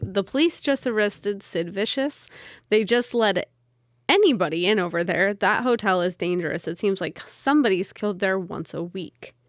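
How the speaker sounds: usual speaking voice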